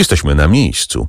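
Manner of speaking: plain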